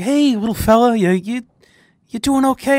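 put-on condescending, high-pitched, patronizing baby-talk cooing. Speaker mimics people who talk to him like a baby, mimicking talking to a baby. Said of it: "you're coming at me like I'm a fucking baby".

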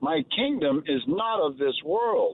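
ordinary delivery

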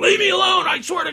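put-on, very high, yelled-out screaming outburst. Retelling what the old neighbor screamed coming out the door: imitating someone screaming. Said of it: "still screaming".

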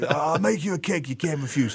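put-on mafia boss character voice. Retelling a celebrity baker hugging his mother, doing a Godfather impression. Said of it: "I'm making him sound like the Godfather".

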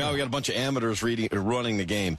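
plain

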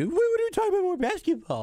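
put-on very high, whiny little baby voice.

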